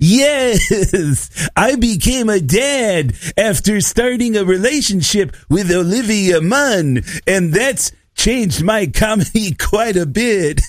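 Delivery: playful character voice. Reading a third clue for a guessing game: playful Big J impression. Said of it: "my third type of impression of Big J".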